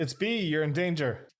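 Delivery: shouting. In a role-playing game, a player's character yells to B: yelling. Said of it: "And I just yell".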